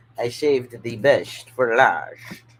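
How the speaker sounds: spooky, loud attempted vampire voice. Sorting piles of cards, trying to sound like a vampire. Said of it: "Me trying to sound like a vampire".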